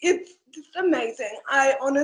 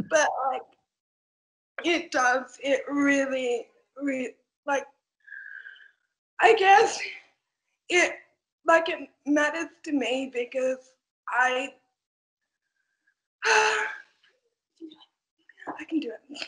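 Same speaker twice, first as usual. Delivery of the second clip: tearful, near tears, voice breaking. Thanking someone for choosing them, getting teary. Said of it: "Now I'm getting teary".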